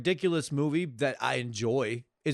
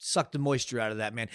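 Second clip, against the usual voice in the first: ordinary delivery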